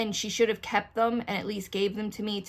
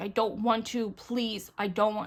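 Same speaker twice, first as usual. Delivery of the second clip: panicked pleading voice. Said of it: "having a panic attack".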